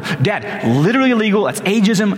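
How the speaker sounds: put-on, high-pitched, unglued, losing-it outrage. Retelling learning his father lost a promotion: retelling his own outburst. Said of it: "I am losing my mind".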